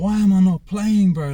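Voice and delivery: loud, high-pitched, frustrated outburst.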